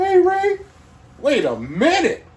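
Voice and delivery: very high cartoon voice, pitch swooping widely. Retelling his best friend's sick father greeting him, in a Mickey Mouse voice. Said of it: "Mickey Mouse voice, one hundred percent".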